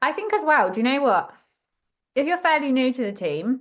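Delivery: muffled speech with mouth full of food. Speaking up in a group discussion, talking with mouth full. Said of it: "I've just got a mouthful of salad".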